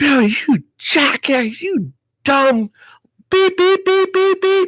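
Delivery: mock furious yell, very high, rising and drawn out. Retelling screaming at himself after throwing it in the trash: imitating own past screaming. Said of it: "I was screaming at myself".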